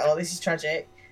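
ordinary talk

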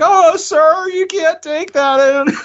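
high, slow, squeaky delivery. Imitating a store worker telling a customer no: Simpsons squeaky voice teen. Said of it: "the squeaky voice teen from Simpsons".

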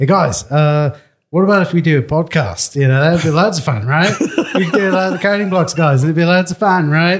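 high, rough, loosely attempted Australian accent. Retelling a message proposing a podcast: imitating Zach in an Australian accent. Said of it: "I don't sound anything like Zach, but that's the approximation".

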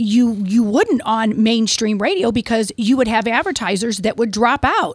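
plain

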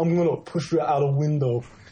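put-on Italian tough-guy accent. Riffing on a comic-book scene, voicing the one who pushes her out, Italian thug voice. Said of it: "sounded like an Italian thug".

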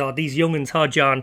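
ordinary delivery

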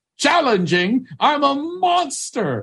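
shrill, high-pitched yell pushed way up high. Retelling how a man answered through the bathroom door: retelling a yell. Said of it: "is what he yelled".

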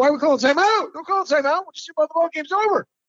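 acted, shrill, very high screaming. Retelling a player's protest against a timeout call: imitating Kyle Lowry screaming. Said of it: "Lowry starts screaming".

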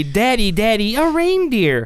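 put-on delighted, high, happy toddler-like yell. Retelling what his daughter shouted on seeing a deer, retelling a happy yell. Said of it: "she yelled happily".

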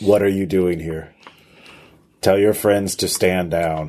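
robotic, electronic-sounding voice. Voicing someone holding a gun to a player's head: electronic voice. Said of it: "there is a electronic voice saying".

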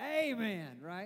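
drawled Southern accent. Preacher asking the congregation for an amen, southern drawl. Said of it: "you got to get the southern drawl in there".

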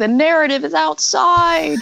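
acted high yelling. Recapping a radio drama preview, one character yells at another: retelling a yell. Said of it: "he's yelling at her going".

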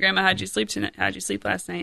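plain

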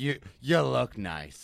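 put-on raspy older woman voice. Repeating the older woman's line: raspy put-on voice of an older woman. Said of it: "That's the raspy voice is exactly how".

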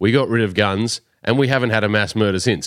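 ordinary talk

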